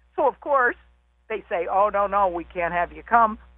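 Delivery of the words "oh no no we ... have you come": ordinary talk, nothing marked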